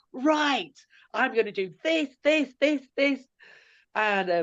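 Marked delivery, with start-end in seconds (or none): 0.2-3.2 put-on energized, eager voice, higher and quieter. Retelling a housemate charging in early, imitating Celia fully energized. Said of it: "she's fully energized".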